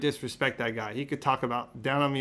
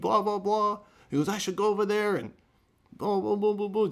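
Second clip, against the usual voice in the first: put-on screaming, higher pitch; 7 semitones higher than usual. Retelling how a boxer reacted to a question: imitating someone screaming. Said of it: "he starts screaming at me".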